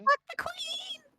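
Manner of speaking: highest possible shrill falsetto shout. Changing one's own voice to sound as unlike oneself as possible: highest possible falsetto. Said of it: "I'm changing my voice as much as possible".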